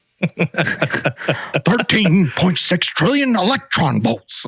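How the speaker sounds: quirky mad-scientist voice. Asked by a co-host to say the number like Doc Brown, a Doc Brown impression. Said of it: "can you say it like you're Doc Brown?".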